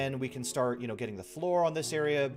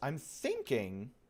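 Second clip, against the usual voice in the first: cracking voice, quieter; 6 dB quieter than usual. A player narrating a game, voice cracking. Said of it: "Sorry for the voice crack right there".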